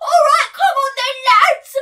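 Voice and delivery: very high, loud, belted out. Mocking the casting of a film role: imitating James Corden. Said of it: "they've cast someone who's like".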